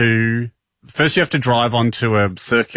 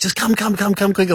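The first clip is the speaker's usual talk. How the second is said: put-on angry urging, much higher pitch; 9 semitones higher than usual. Retelling how a guy urges you to hurry up, imitating an angry urging. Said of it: "But he's like so angry at you".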